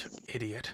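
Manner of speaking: said quietly under breath. Voicing a character who hears of a death, muttered under her breath. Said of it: "it's under her voice".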